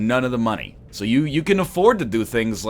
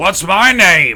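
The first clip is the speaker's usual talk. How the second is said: loud, high-pitched belting; 7 semitones higher, 8 dB louder than usual. Doing celebrity impressions for chat: Al Pacino impression. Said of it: "that's my Al Pacino impression".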